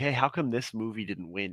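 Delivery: ordinary delivery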